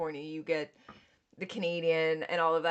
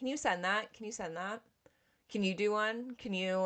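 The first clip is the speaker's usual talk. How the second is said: insistent, nagging, repeated pestering; 3 semitones higher, 6 dB quieter than usual. Retelling asking people to send disclaimers, imitating own nagging. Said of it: "I felt like I was nagging people".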